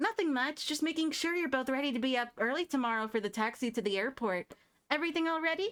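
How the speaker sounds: high, squeaky put-on character voice. Reading a script aloud, the speaker voices a female character: higher-pitched squeaky voice. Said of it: "I have to do a higher pitched voice for her because I gave her the squeaky voice".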